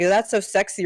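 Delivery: strange, uncomfortable, off-putting delivery. Retelling what a guy in a Discord chat said: imitating a weird tone. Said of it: "he said it like".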